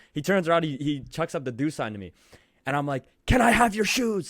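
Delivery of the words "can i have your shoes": acted-out very high screaming yell. A fan retells screaming at a player who turned around: retelling a scream. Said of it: "I just screamed that at him".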